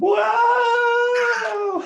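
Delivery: very high, drawn-out scream at full lungs. Planning a game of chase with a dog, screaming. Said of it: "I can start screaming".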